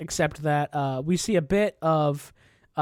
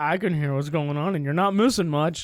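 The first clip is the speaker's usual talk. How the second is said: snide mock digital-assistant voice. Retelling how the smart speaker answered him, imitating Alexa's snide tone. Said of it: "she literally says it like in a snide tone".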